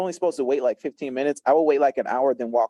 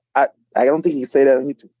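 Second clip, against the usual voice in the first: ordinary talk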